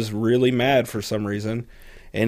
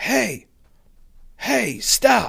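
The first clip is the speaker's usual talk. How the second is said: mock very high, hoarse, rough screaming; 12 semitones higher than usual. Recounting disc golf when someone behind screamed at the group; retelling the scream.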